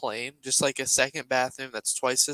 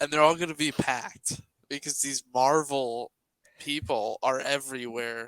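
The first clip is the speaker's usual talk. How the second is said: ordinary talk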